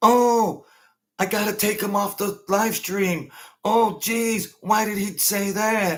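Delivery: mocking sniveling wimp voice. Imitating someone pulling a caller off a live stream: mocking imitation, like a little bitch. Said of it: "Like a little bitch".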